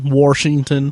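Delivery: Washington in Southern accent.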